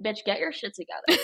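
judgmental house cat voice. Voicing a cat that judges its owner: voicing the judging cat. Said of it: "she looks at me like".

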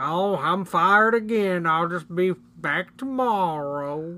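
creepy, slow, weird voice. Quoting a movie's southern janitor who says creepy things: creepy Whitey voice. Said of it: "says real creepy, weird things like".

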